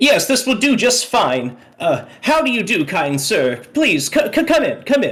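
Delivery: high-pitched, sing-song, scurrying little man voice. Voicing a little man with tiny glasses running out to the group: scurrying little man with glasses. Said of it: "and he's like".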